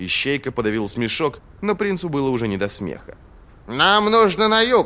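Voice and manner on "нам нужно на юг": high, slow, sharp, curt, biting snap. The prince, in no mood to laugh, snaps at the girl. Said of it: "огрызнулся он".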